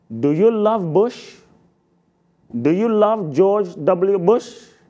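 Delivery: put-on slow Indian English accent. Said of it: "he looked at me with his Indian accent".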